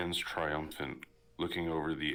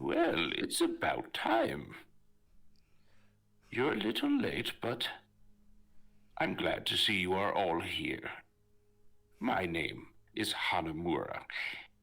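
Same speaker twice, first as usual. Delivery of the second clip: put-on animated old man voice with swooping pitch; 2 semitones higher than usual. Game narrator voicing the guide greeting the players: Hanamura old man voice. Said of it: "you hear the voice of an old man".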